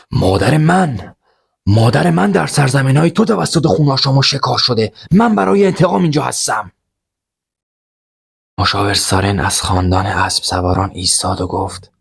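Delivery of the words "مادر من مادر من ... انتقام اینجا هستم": full-throated, loud, high, rasping shout. Reading a story, a character answers before the king: loud shout. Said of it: "وریا با صدای بلند داد زد".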